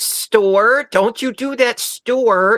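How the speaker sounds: put-on very high-pitched, thick Canadian accent. Recalling Stuart from Mad TV and his mom; thick Canadian accent, Stuart's mom. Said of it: "with the really thick Canadian accent".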